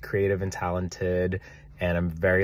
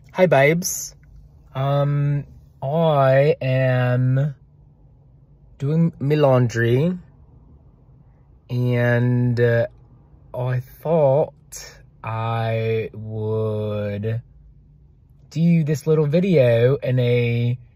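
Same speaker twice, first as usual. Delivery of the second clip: really terrible fake Australian accent, pitched up. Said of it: "really terrible Australian accent".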